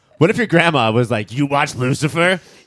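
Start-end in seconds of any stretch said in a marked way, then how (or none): 1.3-2.4 motherly character voice. Joking about a friend's grandma at a family dinner, imitating the friend's mom's voice. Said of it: "that's your mom's voice".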